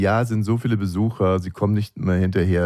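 ordinary talk

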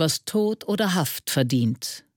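ordinary delivery

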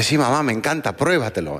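ordinary talk

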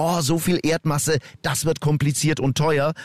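ordinary delivery

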